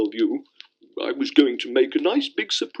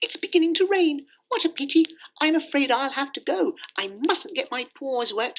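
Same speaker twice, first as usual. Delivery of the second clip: tiny, very high little kitten voice; 13 semitones higher than usual. Narrating a bedtime story, voicing the next-door kitten as rain begins. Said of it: "the next-door kitten came scampering through the grass and trotted up to [name]. / she said, / xx Bedtime Stories xx".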